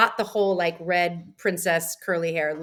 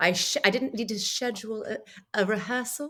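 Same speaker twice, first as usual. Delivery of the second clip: affected, put-on British English accent; 4 semitones higher, 3 dB quieter than usual. Showing off a british accent to the others: british accent. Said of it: "See how I did that?".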